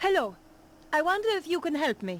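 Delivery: put-on French accent. A character posing as Madame Petra asks security for help, French accent as Petra. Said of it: "except for the French accent".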